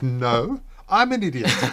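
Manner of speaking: mock-indignant tone. Retelling a word game where Justin protests Ryan's answer, mock-indignant protest. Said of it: "Justin is very indignant".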